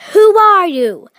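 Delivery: sudden, loud, high shout. The Tin Man rushes toward the little man with his axe, shouting. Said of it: "rushed toward the little man and shouted".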